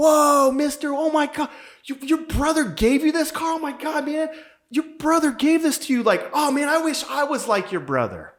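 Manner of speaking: mock very high, loud, gushing, awed kid voice. Retelling a kid reacting to a man's story about his car, imitating an excited kid. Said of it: "The kid goes crazy and was like".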